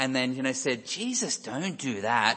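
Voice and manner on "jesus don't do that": slow, creepy, sinister put-on pantomime-villain voice. Describing a pantomime bad guy, speaker uses a put-on creepy villain voice. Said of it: "in a creepy voice".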